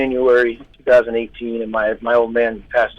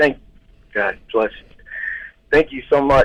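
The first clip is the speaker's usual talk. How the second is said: choked-up, catching voice breaking with emotion; 3 semitones higher than usual. Just told they are being given a car, choked up, struggling to talk. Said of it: "I'm having trouble talking".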